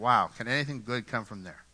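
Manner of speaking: mock sneering, doubtful, dismissive scoff. Retelling a skeptic rolling his eyes at Nazareth: imitating Nathaniel's eye-rolling scoff. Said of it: "He's rolling his eyes and he's like".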